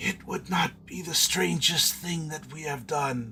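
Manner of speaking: mocking, sarcastic whisper. Reading a story aloud, voicing Raistlin's reply: sarcastic whisper. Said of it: "commented sarcastically in a whispering voice".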